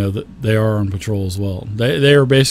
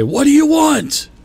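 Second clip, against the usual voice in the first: harsh, rough creature voice, pitched very high; 3 dB louder than usual. A game master voices someone behind a door, in a rough, rushed voice. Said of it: "Like it's a really like rough voice".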